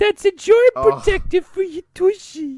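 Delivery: very high, squeaky cartoon old man voice. Discussing a Christmas movie, a speaker does the Whitey voice. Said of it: "it's basically Arthur doing the Whitey voice".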